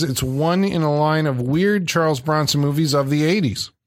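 plain

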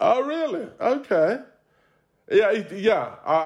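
taken aback. Reacting to another speaker's reply in a conversation: surprised. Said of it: "You sound surprised".

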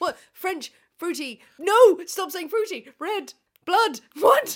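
very high, very loud, shrill, flustered, panicked babble. Struggling to remember the name of a drink, panicking. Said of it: "Clearly I'm panicking".

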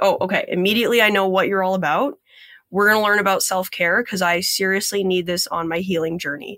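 plain

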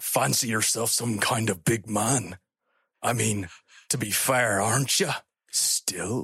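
low, deep Scottish brogue. Voicing a character in the group's scene, in a Sean Connery Scottish voice. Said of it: "we're doing a little Scottish for him".

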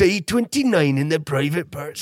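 put-on, mock Geordie accent. Speaker giving one line a go for listeners, in a mock geordie accent. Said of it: "do a mock Geordie accent".

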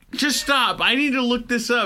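mock frazzled outburst, high and loud.

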